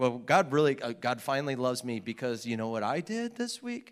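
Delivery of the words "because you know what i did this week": ordinary talk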